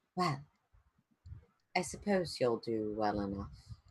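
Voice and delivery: very soft, very quiet voice. Describing a player attuning to a blade, the speaker voices the soft voice within their mind. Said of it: "you hear a soft voice within your mind".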